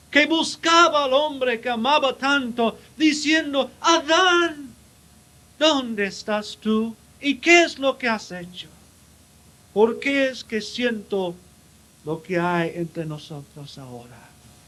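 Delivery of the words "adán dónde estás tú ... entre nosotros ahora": acted-out tender, heartbroken, swooping voice, name drawn out. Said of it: "Fue voz de amor tierno, voz de un corazón quebrantado".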